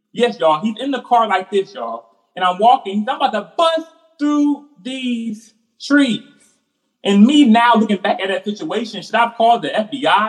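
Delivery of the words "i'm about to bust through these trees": crazed, high, drawn-out screaming. Recalling a man in a car screaming while the speaker walked past, imitating a man screaming. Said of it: "I hear this man screaming".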